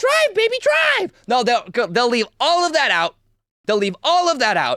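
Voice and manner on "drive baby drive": play-acted, very high screamed cry. Retelling what a woman's wife screamed during the incident: imitating someone screaming. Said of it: "her quote-unquote wife was screaming".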